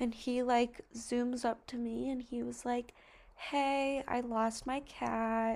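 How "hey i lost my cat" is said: very slow creepy voice with "cat" drawn out. Retelling what a middle-aged guy said when he zoomed up, imitating a creepy voice. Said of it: "in a really creepy voice".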